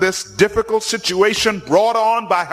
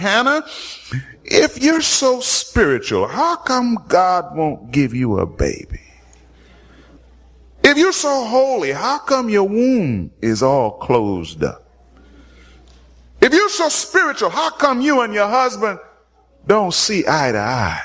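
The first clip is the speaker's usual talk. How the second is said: put-on cruel tone, muttered under breath. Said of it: "under her breath say the most evil".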